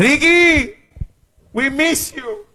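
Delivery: high-pitched put-on pleading.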